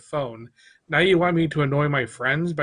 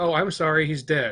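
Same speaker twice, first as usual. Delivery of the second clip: usual speaking voice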